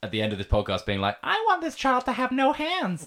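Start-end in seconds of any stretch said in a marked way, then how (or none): 1.2-3.1 very high, camp delivery. Imitating the other speaker wrapping up a podcast: camp imitation of Sebastian.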